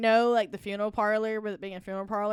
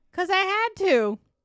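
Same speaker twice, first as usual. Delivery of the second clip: woman's voice raised to very high pitch; 11 semitones higher, 6 dB louder than usual. Retelling a spirit box answer to why the door slammed: imitating a woman's voice. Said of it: "in a woman's voice".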